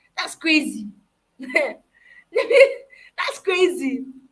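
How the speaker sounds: very slow, laughing through the words. Speaker giving advice on mentorship, apologizing for laughing: laughing while talking. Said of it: "I'm sorry I'm laughing".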